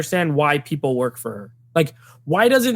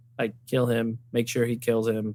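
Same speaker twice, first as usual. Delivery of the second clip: mock very low, flat, deadpan monotone; 7 semitones lower, 8 dB quieter than usual. Mimicking how she delivers her threatening lines, flat monotone delivery. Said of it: "She delivers every line like very monotone".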